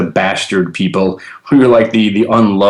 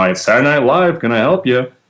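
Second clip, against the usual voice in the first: silly, goofy, high-pitched put-on voice; 5 semitones higher than usual. Speaker reenacts answering the phone at his job, in a funny silly voice. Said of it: "I answered the phone with a funny voice".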